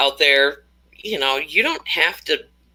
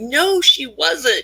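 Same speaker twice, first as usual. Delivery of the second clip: mock, very high, screamed outburst; 10 semitones higher than usual. Retelling a reaction to news coverage: imitating own screaming.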